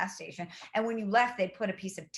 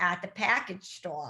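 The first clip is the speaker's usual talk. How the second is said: imitated Boston accent. Retelling what the checkout woman said, in a Boston accent. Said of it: "like she was in Boston".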